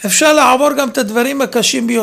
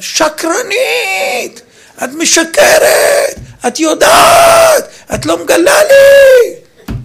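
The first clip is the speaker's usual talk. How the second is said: shrill, very high, very slow drawn-out shouting; 11 semitones higher, 4 dB louder than usual. The speaker recounts her mother yelling at her; retelling mother's yell. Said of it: "צעקה".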